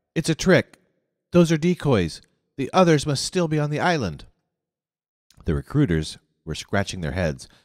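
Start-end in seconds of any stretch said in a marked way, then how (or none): 0.1-4.2 sudden, high, cried-out exclaiming. Narrator reads mr. curtin stopping his wheelchair and pointing at a station wagon, crying out. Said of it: "pointed at the station wagon and cried".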